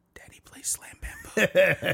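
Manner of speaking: leaning-in, very slow, drawn-out whisper. Retelling how a son leans in to tell a secret: imitating a whisper. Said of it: "my son will lean in and whisper".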